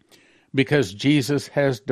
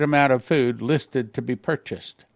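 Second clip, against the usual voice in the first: normal talking voice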